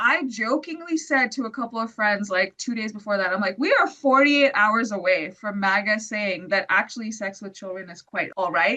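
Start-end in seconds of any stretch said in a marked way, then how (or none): none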